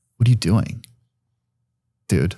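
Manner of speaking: put-on tone dripping with disgust. Retelling her reaction after being pulled aside: imitating someone's disgust. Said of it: "looks at me with disgust".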